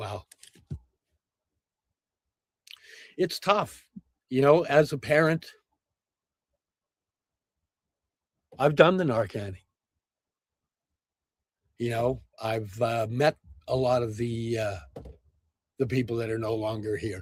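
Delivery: heartfelt, emotionally stirred, low-voiced speech. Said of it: "I got emotionally attached there".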